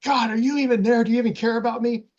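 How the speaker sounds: acted, very high, tearful crying scream. Recalling crying at a stoplight while driving home from college, retelling own past scream. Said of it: "I just remember just screaming like".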